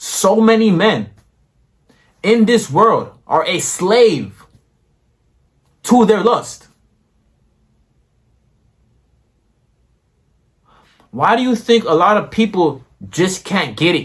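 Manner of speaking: fired-up, worked-up emotional outburst, pitched high. Speaker talking to listeners just before saying they'll calm down: worked up. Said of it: "I'm gonna calm down now".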